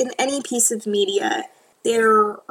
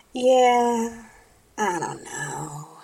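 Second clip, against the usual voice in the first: deflated, beaten-down, drawn-out tone. Trailing off in a conversation, sounding defeated. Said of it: "You just sound so defeated".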